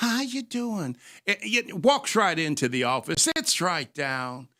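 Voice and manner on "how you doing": soft, gentle, nice, pitched-up, sweet-talking voice. Retelling how a persistent man greeted him, imitating a soft, nice voice. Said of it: "he talks real soft, real nice".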